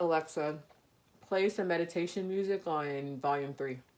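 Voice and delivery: talking with mouth full. The speaker asks alexa to play music: talking with mouth full. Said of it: "because my mouth is full".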